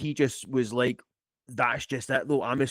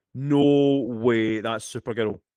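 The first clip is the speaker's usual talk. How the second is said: ordinary delivery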